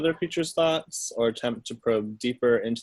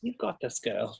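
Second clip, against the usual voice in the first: soft, half-whispered aside; 6 dB quieter than usual. Speaking in character to a teammate, half-whispering encouragement: half-whispering. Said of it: "I'm gonna whisper to Zinzi's".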